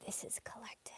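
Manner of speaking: breathy voice giving out, near a whisper. Addressing a group, apologizing as her voice gives out; voice giving out. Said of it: "my voice is going".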